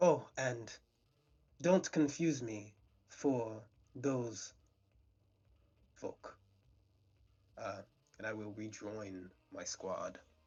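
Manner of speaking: slick, oily, ingratiating smarmy tone. A departing character turns back one more time for a parting remark, smarmy. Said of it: "he says it in kind of a swarmy way".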